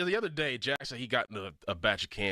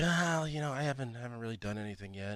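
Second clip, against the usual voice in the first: put-on voice in a half-whisper; 3 semitones lower, 4 dB quieter than usual. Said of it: "That's your Mackie impression".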